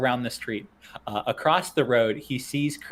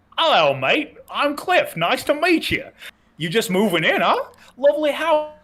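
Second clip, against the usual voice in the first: put-on very high-pitched, loud Australian accent; 11 semitones higher, 5 dB louder than usual. As Cliff, greeting someone who is just moving in, in a put-on accent. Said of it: "I'm immediately giving up on this accent".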